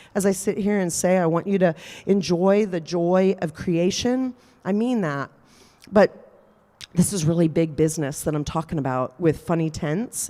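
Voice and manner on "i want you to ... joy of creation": usual speaking voice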